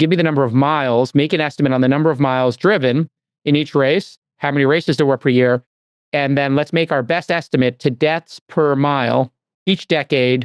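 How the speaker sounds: ordinary talk, nothing marked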